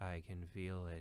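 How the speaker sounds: flat computer voice. Discussing a film computer begging not to be shut off: monotone pleading HAL voice. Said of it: "in the most monotone version ever is just pleading".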